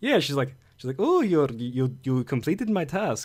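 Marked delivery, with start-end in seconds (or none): 1.0-3.3 bad fake accent that comes out Russian. Quoting a woman after the hero completes her task, in a put-on Russian-sounding accent. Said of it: "That was a better Russian accent".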